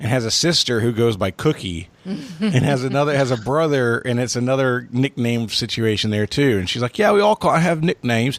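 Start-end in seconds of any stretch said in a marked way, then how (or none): 7.0-8.4 attempted put-on Australian accent. Retelling what Mel said, imitating Mel's Australian accent. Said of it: "I was imitating Mel".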